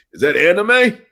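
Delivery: put-on very high, very loud old codger voice. Asking whether a show is anime, joking: mock old man voice. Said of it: "Do I sound like an old man?".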